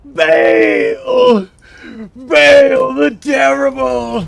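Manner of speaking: very loud, very high, rough, booming announcer-style yell. A player showing how the game's voice actor says the character's name, imitating the voice actor's yell. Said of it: "the way he's like yelling it".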